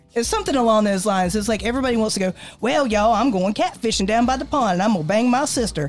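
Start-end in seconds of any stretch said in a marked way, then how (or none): 2.6-5.9 exaggerated put-on dumb-sounding Southern accent. Discussing Southern accent stereotypes, the speaker mimics what everybody does: mock dumb Southern accent. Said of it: "that stereotype that's associated with the Southern accent".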